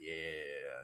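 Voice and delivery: low, creepy voice. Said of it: "be in the corner to be like".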